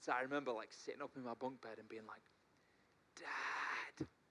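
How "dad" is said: scared, stage-whispered little half whisper shout. Retelling calling to Dad at night: imitating a half whisper shout. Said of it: "little half whisper shout".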